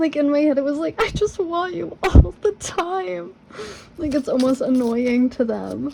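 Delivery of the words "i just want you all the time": tearful, weepy, high crying voice, drawn out. Reading out message number eight, the speaker voices it in a crying voice. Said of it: "I read that with like a crying voice".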